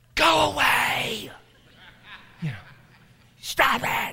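slow, hissed whisper pushed like a yell. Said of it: "yell through a whisper".

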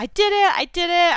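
high, loud, elated shout. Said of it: "I was shouting down the phone".

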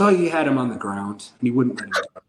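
ordinary delivery

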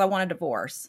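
heavy, solemn, somber, grave tone. Retelling how he asked for a divorce, imitating a somber tone. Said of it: "somber as a statue".

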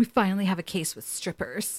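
put-on excited voice. Retelling Dean's reaction on getting to the car: imitating Dean super excited. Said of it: "Dean was, like, super excited".

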